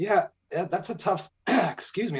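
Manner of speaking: talking through a choke. Starting to answer a question, choking while talking. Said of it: "I'm choking".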